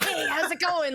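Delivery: put-on raspy voice. Retelling meeting Steve-O on a film set: raspy Steve-O voice. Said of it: "he had that super raspy voice".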